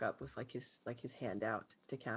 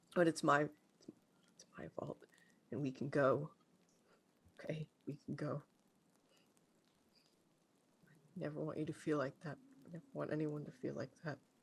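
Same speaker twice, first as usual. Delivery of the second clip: tearful crying whisper, quieter; 3 semitones higher, 4 dB quieter than usual. Playing a character who clings to another character: crying and whispering. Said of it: "start crying and just whispering to Cassie".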